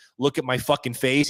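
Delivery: ordinary talk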